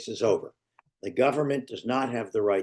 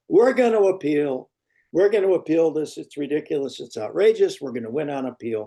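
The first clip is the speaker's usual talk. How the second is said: booming, all-out, loudest possible voice; 4 semitones higher, 5 dB louder than usual. Describing a convicted defendant announcing an appeal; retelling a loud declaration. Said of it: "says in the loudest voice he or she can summon up".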